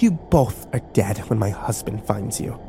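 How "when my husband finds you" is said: ordinary delivery, nothing marked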